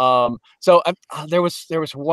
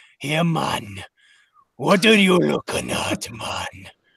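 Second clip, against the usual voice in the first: all-raspy, put-on Jamaican patois accent; 3 dB quieter than usual. A speaker demonstrates a troll character's voice; raspy put-on jamaican accent. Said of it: "put on the Jamaican, and then you got to get it all raspy".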